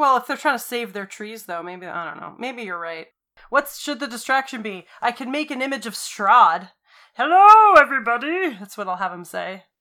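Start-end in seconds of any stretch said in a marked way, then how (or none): 7.1-8.5 big, goofy voice, pitched up. Speaker makes an image of Strahd as a distraction, Muppet-like Strahd voice. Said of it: "He sounds like a Muppet!".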